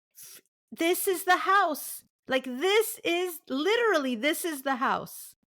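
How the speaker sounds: acted-out, full-on, high, screamed outburst. Retelling seeing a photo of the house she wrote about: retelling own past scream. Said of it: "So I know I'm screaming".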